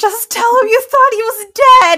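very high, very loud, shrill shouting yell. Retelling watching a stressful show, retelling yelling at the screen. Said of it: "yelling at the screen".

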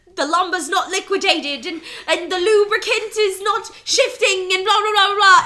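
loud, terrible fake British accent. Retelling a movie scene, imitating Don Cheadle's terrible British accent. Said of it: "this crazy, terrible British accent".

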